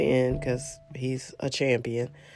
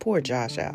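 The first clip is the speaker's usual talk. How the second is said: normal talking voice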